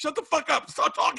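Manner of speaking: sharp, high, snapping, dismissive voice. Acting out an impression of Bill snapping at him. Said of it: "And Bill going".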